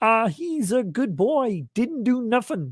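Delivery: high-pitched, slow delivery. Reading out a message that asks for it: Kermit voice. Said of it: "in Kermit voice".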